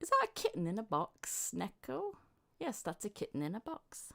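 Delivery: animated cartoon voice, swooping sing-song pitch. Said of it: "Sounds like Meg imitating, imitating Lois".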